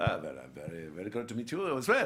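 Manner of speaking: low, fake German accent kept up throughout. Retelling a scene where both actors talk in german accents; his reply in put-on german accent. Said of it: "we're both talking in these German accents".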